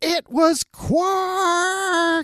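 put-on very high scream, one word drawn out. Recapping a scene where she names who did it: retelling a scream. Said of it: "she screams out".

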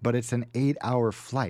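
ordinary talk

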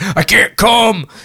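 put-on old man voice. Joking about a tech support call from an old man, in old man voice. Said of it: "you get a call from like an old man".

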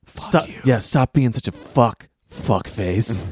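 hushed, slow, quiet whisper. Retelling how a character wakes a man up: imitating a whisper.

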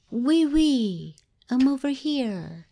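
high, ghostly calling-out voice speaking French. Telling a haunted-location story, voicing what the spirits say, in a soft French-speaking voice. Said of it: "hear a soft voice speaking French".

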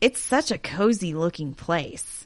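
said sarcastically. Showing another speaker a picture of the hospital: sarcastic. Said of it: "I detect sarcasm".

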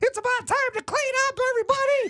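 very high-pitched shop teacher voice. Recalling cleanup time in shop class, imitating the shop teacher. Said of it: "he was the shop teacher".

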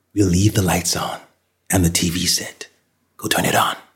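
ordinary talk

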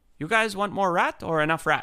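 gentle, slightly high voice. Retelling the fixer Somo offering more rat: imitating Somo, soft-spoken. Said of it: "he's a super soft-spoken Myanmar guy".

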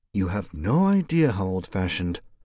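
mumbled low into the chest. Reading a woman's aside about a man in the woods, mumbled. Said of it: "Mercedes mumbled".

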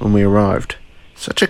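ordinary delivery, nothing marked

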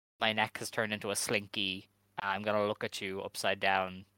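ordinary talk

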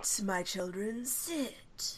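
mystical fortune-teller voice, intoning like a soothsayer. Urged by a co-host, the speaker repeats the teacher's line: Trelawney voice. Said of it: "You have to say it in Trelawney's voice".

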